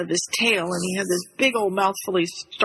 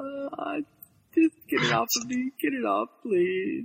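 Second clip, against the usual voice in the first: high, put-on pleading little cat voice; 5 semitones higher, 5 dB quieter than usual. Voicing a frightened cat begging to be rescued: voicing Bonnie the cat, put-on pleading. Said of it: "And Bonnie's just like".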